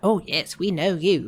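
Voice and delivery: bad, terrible put-on Yorkshire accent. Recapping a scene, the speaker quotes a woman addressing Curtis: terrible Yorkshire accent. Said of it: "That was a terrible accent".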